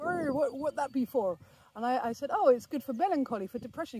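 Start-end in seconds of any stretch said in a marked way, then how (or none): 0.0-1.4 put-on Somerset accent, much slower. Retelling a passerby's question while filming, the speaker uses a Somerset accent. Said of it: "with a good Somerset accent".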